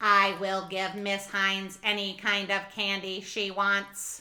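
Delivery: flat, level, even monotone robot voice. Voicing the robot Candy Robo greeting the drama students: Candy Robo robot voice. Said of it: "What does that mean, you're a candy robot?".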